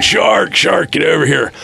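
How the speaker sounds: put-on frantic shriek, very high and rough. Retelling a moment in the water, the speaker acts out screaming to Logan. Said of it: "I start screaming".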